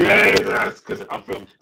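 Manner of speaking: breathless, slowed robotic croak with almost no voice.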